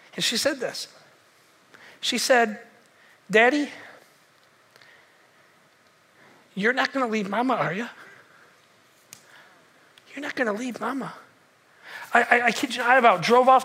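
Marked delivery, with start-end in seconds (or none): 3.2-11.1 hushed, soft, gentle, fear mixed with hope. Retelling a young daughter's question from the back seat: imitating a gentle, soft, fearful voice. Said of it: "It was so gentle and so soft".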